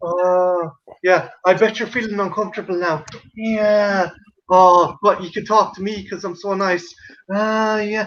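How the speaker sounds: hypnotized, trance-like voice. Retelling an interview with Alison Mack: hypnotized Alison Mack impression. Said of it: "she's been fucking hypnotized by Dracula. She's like".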